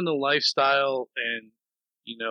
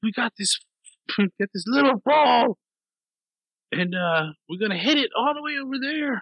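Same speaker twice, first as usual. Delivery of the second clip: put-on very high, squeaky Scottish accent; 10 semitones higher than usual. Retelling a Robin Williams stand-up bit, doing his Scottish accent. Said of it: "He's doing like a Scottish accent".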